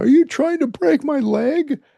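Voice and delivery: play-acted very high, loud pleading, nearly in tears. Retelling what a sacked quarterback said to a lineman, imitating someone almost crying. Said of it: "they said he was almost crying".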